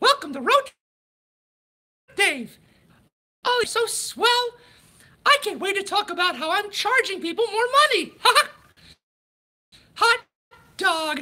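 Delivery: very high-pitched cartoon mouse voice. Someone requested the Mickey voice, so he opens the show in it: Mickey voice. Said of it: "the Mickey voice".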